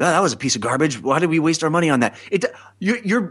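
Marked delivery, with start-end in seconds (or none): 0.0-2.2 private, confiding aside. Showing how to chat with a friend during movie credits: sotto voce. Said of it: "but you do it sotto voce".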